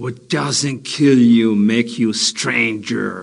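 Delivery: put-on villain voice. Auditioning on tape for a part: Joker voice. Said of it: "Let me introduce you to the new Joker".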